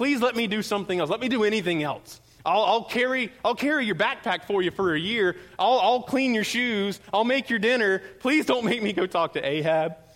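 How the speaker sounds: mock desperate begging, pleading tone. Speaker acts out a man pleading with Elijah, imitating someone begging. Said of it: "just begging".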